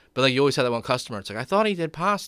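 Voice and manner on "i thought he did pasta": put-on older lady voice, higher pitch. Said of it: "Is that your go-to voice for people?".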